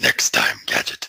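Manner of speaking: deep cartoon villain voice. Friends swap voices after one shows off talking very low; Doctor Claw voice. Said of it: "well now it's Doctor Claw now".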